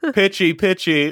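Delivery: very high-pitched, quippy delivery. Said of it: "I was thinking [name]".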